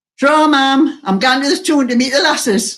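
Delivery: put-on broad Geordie accent. Retelling what he told his mother on the way out the door, in a broad Geordie accent. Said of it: "That's a broad Geordie accent".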